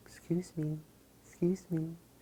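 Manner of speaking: put-on very high, tiny little girl voice. Hairstylist retelling a little girl coming up to her station: little girl voice. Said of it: "in her little voice".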